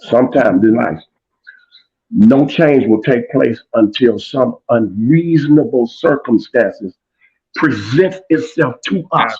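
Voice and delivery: slow, deliberate, drawn-out delivery with every word weighed. Announcing to Jeff he will say this slow, speaking slowly. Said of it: "I'm gonna say this slow".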